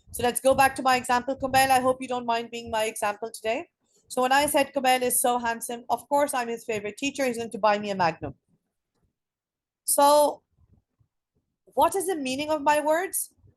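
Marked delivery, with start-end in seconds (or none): none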